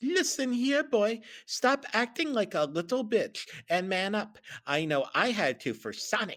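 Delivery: high, stern cartoon fox voice. Retelling a scene where someone starts talking like Tails. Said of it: "he started talking like actual Tails now".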